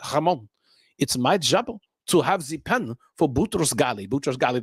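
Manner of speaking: put-on thick French accent. Retelling what his boss at the U N told him, imitating Jean-Marc's French accent. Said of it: "said in his thick French accent".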